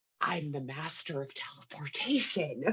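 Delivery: very quiet, hushed whisper, barely voiced. Playing a character who just teleported, whispering to herself. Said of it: "Joshua whispers to herself".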